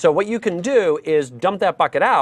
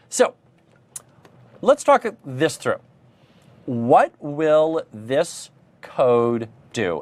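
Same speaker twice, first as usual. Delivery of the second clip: unhurried, measured, slow and deliberate pace; 2 semitones lower than usual. Asking viewers what the code will do, waiting for chat lag: talking a bit slowly. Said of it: "I'm talking a bit slowly here".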